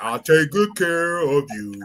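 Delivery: deep, soft, seductive voice.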